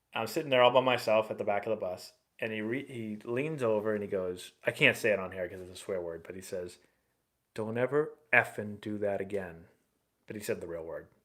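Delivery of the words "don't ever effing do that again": quiet whispered voice. Retelling what the pitching coach said on the bus: whispering a quoted line. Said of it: "He didn't whisper it like that, like I just did".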